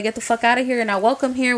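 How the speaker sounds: mock-angry yelling, pissed-off tone. Speaker retells a woman yelling at her to leave, imitating someone pissed off. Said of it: "she was pissed".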